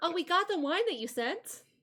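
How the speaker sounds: put-on high, cheerful young little girl character voice. Voicing a grinning little girl who thanks the players: voicing a grinning little girl. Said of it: "she's, like, grinning up at you guys, and she says".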